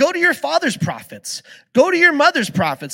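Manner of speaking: mocking, scornful sarcasm in a high sing-song. Retelling a Bible passage, acting out his reply: retelling a sarcastic remark. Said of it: "he goes a little further with sarcasm".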